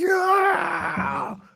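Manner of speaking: hyped, high, joyful yell. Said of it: "I would be like".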